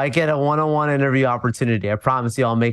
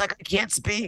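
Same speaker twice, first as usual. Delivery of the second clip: put-on lost voice, much quieter; 8 semitones higher, 8 dB quieter than usual. Describing the end of a long event weekend, imitating a lost voice. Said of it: "my voice is gone. I sound like this".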